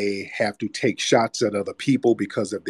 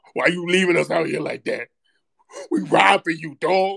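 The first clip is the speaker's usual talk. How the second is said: mock tearful drunk pleading voice, higher; 7 semitones higher than usual. Imitating a drunk caller who is close to tears, pleading with Tariq: imitating a drunk man holding back tears.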